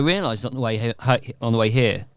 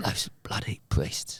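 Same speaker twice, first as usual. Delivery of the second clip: put-on whispery actor voice, lower and quieter; 4 semitones lower, 10 dB quieter than usual. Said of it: "it's got a slight whisper to it".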